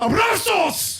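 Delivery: loud, high shouting, belted like all caps.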